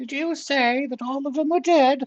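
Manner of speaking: put-on bad comic old lady voice, very high, loud. The game master voicing a female character to the players, in a Monty Python old lady voice. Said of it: "It's not even a good Monty Python old lady".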